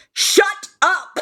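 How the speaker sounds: put-on very high, sudden yell. Retelling how a friend turned around in a theater: imitating him yelling. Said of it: "whipped his head around and yelled".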